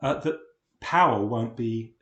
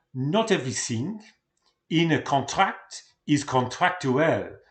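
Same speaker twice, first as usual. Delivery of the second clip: bad put-on French accent; 3 semitones higher, 4 dB louder than usual. Quoting Durkheim, who was French, in a bad French accent. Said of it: "in my bad uh, French accent".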